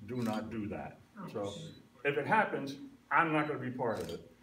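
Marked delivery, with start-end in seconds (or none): 0.1-1.0 put-on stern, very authoritative, low voice. Retelling what Howard said about the prop dredging plan; imitating Howard's authoritative voice. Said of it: "in his very authoritative voice".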